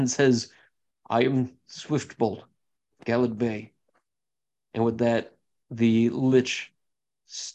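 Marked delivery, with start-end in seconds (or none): 1.1-3.7 trembling, quavering, wavering, shaky voice. Voicing swiftbolt introducing himself to a robed figure: wavering, shaking voice. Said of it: "sort of wavering and shaking".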